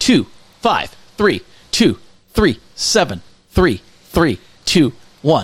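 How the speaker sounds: slowed down and careful. Speaker repeats the phone number for the people in the back, slow and deliberate. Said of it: "let me say it slower for the people in the back".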